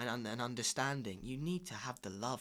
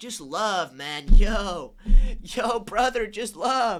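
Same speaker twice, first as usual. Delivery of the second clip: very loud, high put-on laid-back hippie dude voice; 9 semitones higher, 20 dB louder than usual. After saying they sound like a hippie, the speaker plays it up: hippie voice. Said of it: "I sound like a hippie right now".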